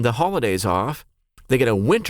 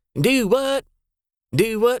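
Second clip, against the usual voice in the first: very high Oklahoma accent; 10 semitones higher than usual. Showing how you can tell you're talking to an Okie, in an Okie accent. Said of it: "That's how you can tell you're talking to a Okie".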